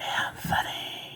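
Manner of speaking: a name breathed in a faint, hushed whisper. Retelling a voice heard alone in a classroom: imitating a whisper. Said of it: "It was like that".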